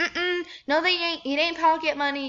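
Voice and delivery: sassy, dismissive, high-pitched delivery.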